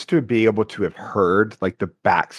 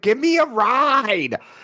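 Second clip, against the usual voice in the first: very high, very slow lewd heckle, "ride" stretched. Retelling what a fan in the crowd yelled: imitating a fan yelling. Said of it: "yell something perverted".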